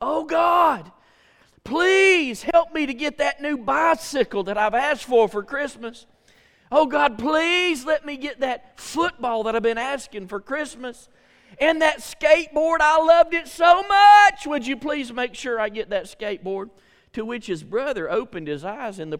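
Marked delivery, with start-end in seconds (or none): 0.0-16.7 put-on child bellowing at top of lungs, loud and high. Retelling how the youngest brother prayed at Grandma's house, imitating a child shouting a prayer. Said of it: "he just started shouting at the top of his lungs".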